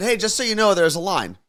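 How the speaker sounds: mock overly polite with edge. Retelling telling line-cutters there's a line: retelling own polite warning with attitude. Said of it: "As politely as I could say".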